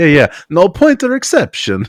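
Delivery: high, loud mock Italian accent. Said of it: "explained to me with an Italian accent".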